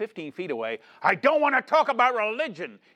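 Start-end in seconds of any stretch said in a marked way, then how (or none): 1.0-2.7 acted bitter, furious shout, pitched up. Deacon recounts a man on the ward yelling at him: retelling a bitter, angry yell. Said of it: "in the most bitter and angry voice".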